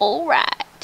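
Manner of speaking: put-on sleazy cartoon voice. Joking about a game character's reaction: Quagmire voice. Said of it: "Like how Quagmire would say it".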